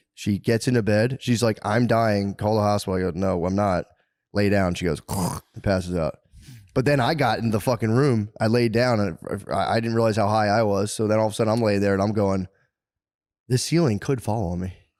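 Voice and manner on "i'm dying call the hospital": plain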